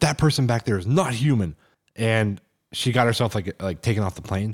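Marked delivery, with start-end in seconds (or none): 0.0-1.5 mock panicked, frantic, freaked-out outburst. Retelling a plane passenger demanding to get off: imitating someone freaking out. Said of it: "the one woman was, like, freaking out".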